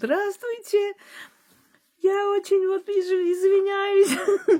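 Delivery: shrill, very high, squeaky put-on woman's voice. Retelling village boys pranking the physics teacher, in a squeaky put-on female voice. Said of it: "с таким женским голосом писклявым".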